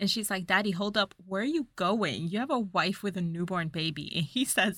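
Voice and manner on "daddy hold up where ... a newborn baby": ordinary delivery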